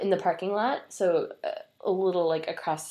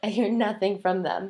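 usual speaking voice

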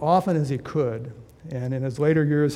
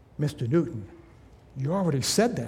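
discreet, hushed stage whisper; 4 dB quieter than usual. Retelling an assistant correcting an old preacher: imitating an assistant half-whispering. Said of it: "his assistant whispered to him".

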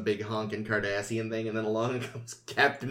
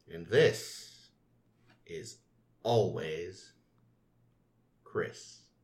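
very slow, low, drawn out with breaks mid-phrase; 4 semitones lower than usual. Signing off at the end of the show with the other hosts, slowed down. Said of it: "Slowing it down".

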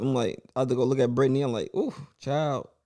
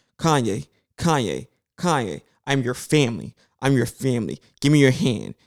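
put-on soothing, coaxing, patronizing tone as if talking to child; 4 dB louder than usual. Retelling how a lady tried to calm someone: imitating talking like to a kid. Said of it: "some lady there talking to him like he a kid".

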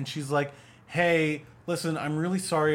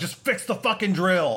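mock irritated, impatient, short-tempered snap; 3 semitones higher, 3 dB louder than usual. Retelling how a movie character snaps at a girl: imitating an impatient snap. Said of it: "He's becoming impatient".

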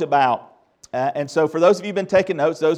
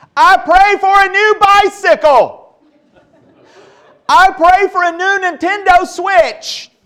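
put-on very high, shrill, very loud kid's bellow; 9 dB louder than usual. Telling a joke, acting out the younger kid praying: imitating a kid shouting. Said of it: "he began to pray at the top of his lungs".

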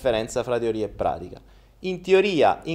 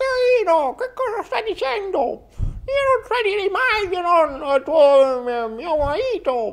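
put-on elderly woman voice, very high. Playing the grandmother in a skit, answering Pino, in an old woman voice. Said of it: "Come si fa la voce da vecchia?".

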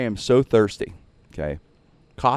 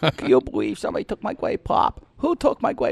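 put-on angry tone, higher; 11 semitones higher than usual. Retelling a coworker walking the hallways, imitating an angry complaint. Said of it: "You could hear him going, complaining".

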